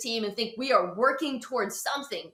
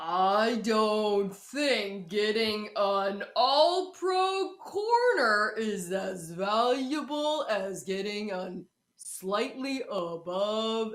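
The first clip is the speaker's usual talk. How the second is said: very slow, slow-motion replay delivery. Reenacting what someone just said, in slow motion delivery. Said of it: "I'll do a slow motion reenactment".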